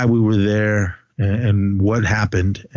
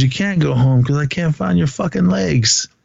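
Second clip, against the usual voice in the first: put-on crying, higher pitch; 6 semitones higher than usual. Retelling a man's story about his screaming wounded buddy, imitating someone crying. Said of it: "because he was crying".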